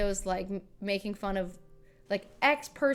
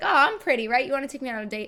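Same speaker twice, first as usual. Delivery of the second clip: loud, joking, playful flirty teasing, acted; 4 semitones higher, 6 dB louder than usual. Retelling what their manager jokingly said to the label rep, mock-flirty joking. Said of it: "Like jokingly".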